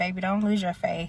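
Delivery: ordinary delivery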